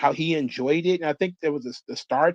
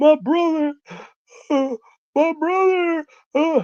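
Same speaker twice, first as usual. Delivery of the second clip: mock very high, drawn-out blubbering through sobs; 12 semitones higher, 5 dB louder than usual. Retelling a girlfriend's late-night call: imitating someone bawling. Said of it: "And she was bawling".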